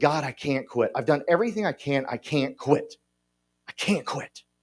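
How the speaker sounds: crying desperately. Retelling crying into a mirror, desperate to quit drinking: imitating own past crying. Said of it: "I was crying into a mirror saying".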